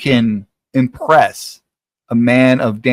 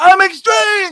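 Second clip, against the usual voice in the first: shrill, very high, loud yell. Imagining a joked-about friend yelling down the road: imitating someone shouting. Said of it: "shouts out loud".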